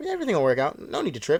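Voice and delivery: dopey, easygoing, dumb-sounding, slightly high voice. Retelling what Lindsay tells a scared Cameron: dumb-sounding Lindsay voice. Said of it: "she's saying it in a dumb way".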